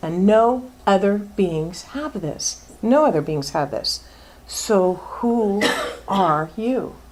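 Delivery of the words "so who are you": every word stretched out slowly. Giving a talk to listeners, Cheshire Cat voice. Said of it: "Sounds like the Cheshire Cat".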